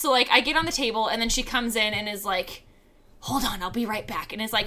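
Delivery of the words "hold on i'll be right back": hushed stage whisper, carrying across the room. Retelling how the other person came in mid-massage: imitating someone half-whispering.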